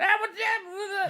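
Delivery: put-on Boston accent. Describing a voice heard in the distance while playing Fallout, in a weird Boston accent. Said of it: "like this weird like Boston accent".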